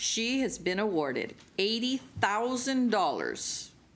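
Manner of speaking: very slow, deliberate, spelled out word by word. Announcing a student's award to an audience: saying it very slowly. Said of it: "I'm going to say it very slowly".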